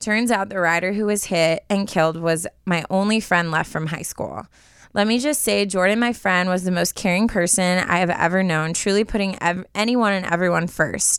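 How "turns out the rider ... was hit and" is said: usual speaking voice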